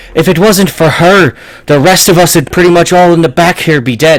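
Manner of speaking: loud, high, angry bellowing in a dwarf voice. Voicing the dwarf boss berating his hired guards: yelling dwarf boss berating guards. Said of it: "he's just yelling at these guys".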